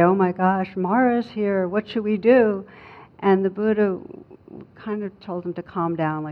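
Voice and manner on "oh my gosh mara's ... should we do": normal talking voice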